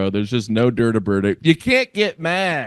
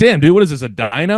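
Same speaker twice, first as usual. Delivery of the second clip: ordinary delivery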